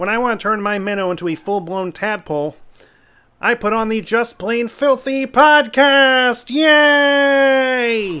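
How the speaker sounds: slow, loud speech with yay stretched out. Opening the podcast intro: Kermit the Frog voice. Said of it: "this is Kermit the Frog".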